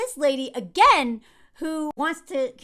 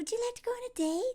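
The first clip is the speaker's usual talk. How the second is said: acted, really sweet and earnest, pitched-up voice; 8 semitones higher, 10 dB quieter than usual. Retelling a character asking a girl on a date: imitating a sweet request. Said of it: "in this really sweet way".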